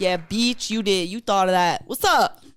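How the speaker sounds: loud hollering, each word stretched out long. Joking back at the other speaker about a word choice, yelling. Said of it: "I'm gonna stop yelling now".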